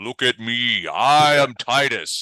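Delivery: very slow, loud, grand booming delivery. Voicing a floating wizard proclaiming himself to a crowd: booming voice. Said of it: "you hear his voice boom out".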